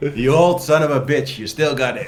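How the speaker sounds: taunting tone breaking into laughter throughout. Playing a character who glares at an old rival, then laughing while speaking in character. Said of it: "suddenly I start laughing and say".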